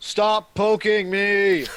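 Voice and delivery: very loud, flat robot-voice scream. A player screaming into another character's face as a barbarian droid. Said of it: "scream into his face in my barbarian droid uh, robot voice".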